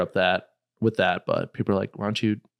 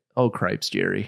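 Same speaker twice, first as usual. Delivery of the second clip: put-on old, bickering grandma voice, northern Wisconsin accent. Talking about northern Wisconsin relatives, quoting how grandma would react; imitating grandma. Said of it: "her voice in my head of being like".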